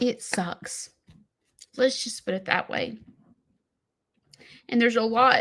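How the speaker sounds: choked-up voice on the verge of crying. Speaker admitting it sucks and starting to cry, choking up. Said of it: "I'm gonna start crying".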